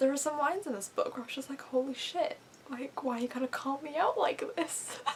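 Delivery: voice close to crying, on the verge of tears. A reader vlogging about a book that moved them, on the verge of tears. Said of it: "I'm about to cry right now".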